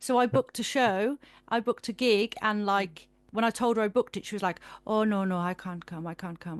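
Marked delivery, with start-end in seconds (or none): 4.9-6.6 put-on heavy Caribbean accent, laid on thick. Speaker quotes their nan's reply on hearing about a booked gig, thick Caribbean accent. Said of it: "she's got like a real thick Caribbean accent".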